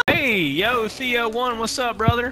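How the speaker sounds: casual, soft livestream-style voice. Someone greeting a player called co1, sounding like a streamer. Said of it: "why you sound like a streamer?".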